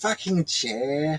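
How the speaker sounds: fake upper-class English accent. People laughing, mimicking how a man swears, in a put-on posh accent. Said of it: "He kind of has like that posh accent, right? Like".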